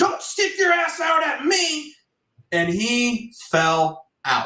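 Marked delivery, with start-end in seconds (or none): 0.0-1.9 very high, stretched-out, drawn-out scream. Retelling a golf round, screaming across the course at a friend: retelling a scream. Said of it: "I screamed".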